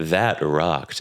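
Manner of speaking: low, flat, deadpan voice with no enthusiasm. Showing how an unenthused-sounding reaction comes out: deliberately flat unenthused delivery. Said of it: "if I just don't sound as enthused".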